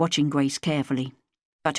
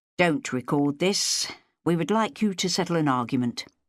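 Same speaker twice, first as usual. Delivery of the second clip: ordinary delivery, nothing marked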